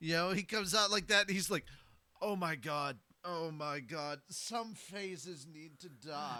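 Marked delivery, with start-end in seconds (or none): 2.2-6.4 put-on good old boy voice. Acting out a planned parody character, a good old boy: Pandora's Actor as good old boy. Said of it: "But I wanna make him one of them good old boys".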